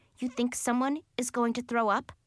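ordinary talk

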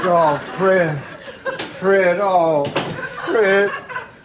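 low, mournful wailing tone.

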